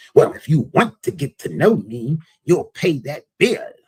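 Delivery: self-righteous voice. Retelling what a date said about the bill: imitating a self-righteous voice. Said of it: "in this real self-righteous voice".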